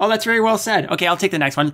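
acted unbothered, offhand delivery. Imitating how the other might read the paragraph: breezy, unbothered reading. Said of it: "read the paragraph like".

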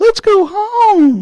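very high, squeaky, scared voice. Retelling a Bible story, a man out of his tent asks, in a mock-scared Mickey Mouse voice. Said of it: "that scared Mickey Mouse voice".

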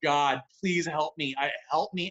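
put-on tearful, crying voice. Retelling praying to God in the hot tub, retelling a crying prayer. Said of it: "so I'm praying to God in the hot tub while I'm crying".

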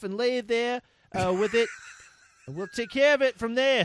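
bad New Jersey accent drifting into Australian. Quoting what Crispo told the girl, in a bad New Jersey accent that sounds Australian. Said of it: "Is New Jersey in Australia?".

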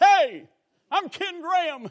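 preacher delivery. Showing how not to greet people at doors: preaching voice. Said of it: "use my preaching voice".

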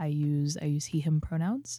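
soft little whisper close to the mic. Introducing yourself on a show, close to the mic: little whisper. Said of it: "I'll do a little whisper".

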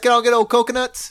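rapid delivery. Showing how an old Southern salty dog would say it, said real fast. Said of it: "say it real fast".

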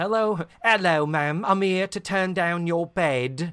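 loud, high, put-on Cockney maid's accent. Speaker retelling a maid arriving at the door voices her, put-on Cockney accent. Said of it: "I just wanted her to be Cockney".

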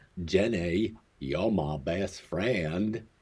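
slow, stretched-out southern drawl, an impression. Listing famous pop-culture duos, doing a Forrest Gump impersonation. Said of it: "That's my Forrest Gump impersonation".

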